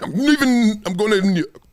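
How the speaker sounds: imitated Greek accent. Acting out a player announcing he is leaving Milwaukee: Giannis accent. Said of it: "is that a Giannis accent?".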